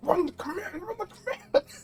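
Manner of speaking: acted-out, very high, frantic, panicked voice. Retelling a moment with the door breaking down, acting out freaking out. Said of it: "So I'm over here freaking out".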